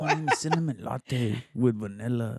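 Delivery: put-on fresa girl voice. Imitating a friend ordering at a coffee shop: put-on fresa voice.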